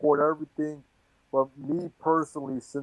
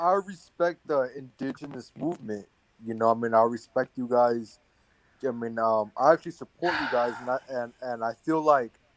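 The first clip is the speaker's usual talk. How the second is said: ordinary talk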